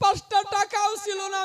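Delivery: high, loud, wailing sob while speaking.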